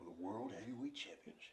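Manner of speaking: deep, hushed movie-trailer voice, very quiet. Telling a story about a wrestling championship match; dramatic movie-trailer voice. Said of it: "I'm adding the movie voice to make it dramatic".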